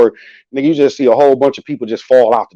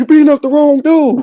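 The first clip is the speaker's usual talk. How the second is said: very high, loud yelling; 14 semitones higher than usual. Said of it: "Do you hear my dad yelling".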